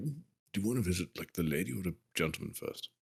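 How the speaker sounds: very quiet hush. Moving away from the others in a role-play scene, the character speaks in a lowered voice. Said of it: "I just lower my voice a little bit".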